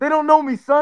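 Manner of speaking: high, put-on swaggering voice.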